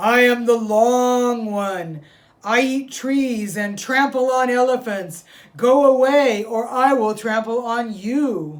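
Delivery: very loud, shrill, booming, high roaring beast. Reading a story aloud, the creature inside Rabbit's house answers in a big bad roaring voice. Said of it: "a big bad voice from inside the house roared".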